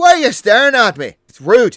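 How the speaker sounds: put-on very loud, high-pitched, tipsy drunken shouting. Voicing a drunk creature yelling at staring onlookers: yelling drunk character. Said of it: "Because you're yelling".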